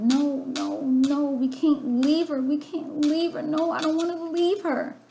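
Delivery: loud screaming and yelling. Retelling being carried away from a tragic scene, retelling own screaming. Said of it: "I'm screaming and I'm yelling".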